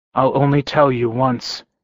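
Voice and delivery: ordinary delivery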